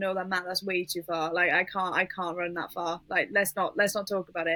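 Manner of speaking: ordinary talk, nothing marked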